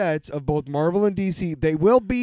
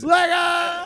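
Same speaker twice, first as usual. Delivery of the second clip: yelling, higher-pitched; 12 semitones higher than usual. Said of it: "screaming about Legos".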